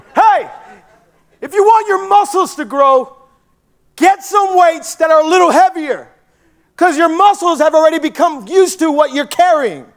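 put-on screaming, scolding trainer voice. Retelling how the gym trainer screamed at another guy: imitating a screaming trainer. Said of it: "He was screaming at this other guy".

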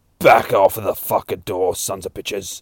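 put-on demonic-style vampire monster voice. Retelling a scene where a voice shouts through a door, demonic vampire voice. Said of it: "this fucking demonic-style vampire voice".

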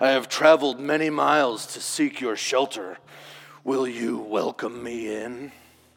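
hissed, sibilant voice. Narrator reads a demon speaking to an old man at his door, hissed. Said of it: "the demon hissed".

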